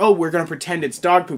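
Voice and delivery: ordinary talk, nothing marked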